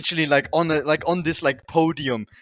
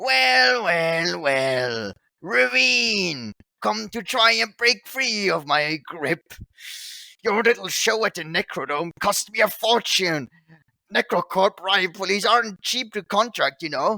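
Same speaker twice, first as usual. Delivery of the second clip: shrill, grating, irritating villain voice; 4 semitones higher than usual. Narrating a game scene as someone speaks from behind the player, shrill, annoying voice. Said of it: "a shrill, annoying voice behind you saying".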